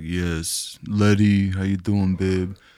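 deadpan, flat, slow monotone with no lift. Showing how he always talks in the movie, do a monotone Vin impression. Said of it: "He's so like monotone".

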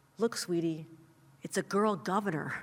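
hushed, soft stage whisper. Retelling what a young mother told her daughter at the fair: imitating a hushed voice. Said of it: "she said in this hushed voice".

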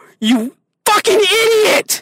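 all-out, really loud, high-pitched shouting. A fan venting about their team wasting a timeout and losing, really loud. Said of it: "I'm sorry, I got really loud right there".

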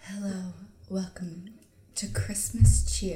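smooth late-night radio host voice, slow and low. Recalling a woman who hosted late-night Christmas music: low smooth voice impression. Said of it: "she'd always be like".

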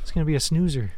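ordinary talk, nothing marked

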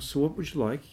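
easy-going put-on Welsh accent. Retelling what the actor said when he came in: imitating a Welsh accent. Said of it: "his Welsh accent".

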